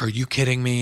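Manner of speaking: ordinary talk, nothing marked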